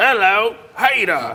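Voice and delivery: put-on English accent. Showing a co-host how to do the intro, English accent. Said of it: "Do it in an English accent".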